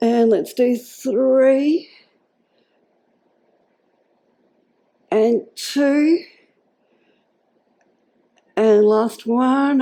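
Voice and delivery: very slow strained voice. Counting down the last reps of an exercise: straining voice. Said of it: "my voice is straining".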